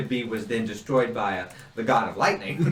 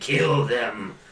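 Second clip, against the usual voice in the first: very gruff, demonic, infernal voice from below. Describing a voice nobody normally hears, the speaker demonstrates a gruff infernal voice. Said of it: "It's a very gruff".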